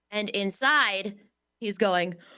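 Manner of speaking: ordinary talk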